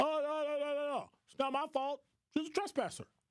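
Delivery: very high, derisive, dismissive mocking voice. Mocking a railroad company's statement about a woman's death: imitating Union Pacific. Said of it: "Union Pacific, she was a".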